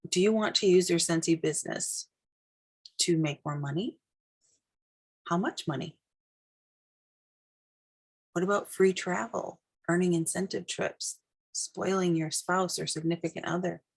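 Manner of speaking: low, soft, murmured background talk. Talking in the background while listeners write their business vision, lowered voice. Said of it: "I'm going to kind of lower my voice".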